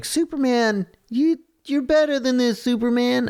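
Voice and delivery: very high, shrill yell. Retelling a man yelling at a drunk 'superman' on the sidewalk, retelling a yell. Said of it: "and then the Billy is like yelling at him like".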